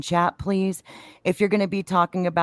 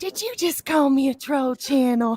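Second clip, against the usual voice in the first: sweet, innocent little voice, high-pitched; 7 semitones higher than usual. Retelling her reply when Texas Troy said he loves her troll channel, imitating a sweet, innocent, high-pitched voice. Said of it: "sweet, innocent, high pitched".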